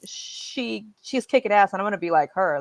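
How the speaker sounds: ordinary delivery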